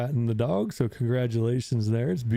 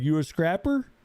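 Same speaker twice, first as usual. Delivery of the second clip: put-on small-town accent, higher; 5 semitones higher than usual. Retelling a movie scene where a small-town woman asks a question: imitating a movie character's accent. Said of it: "And she's got that accent".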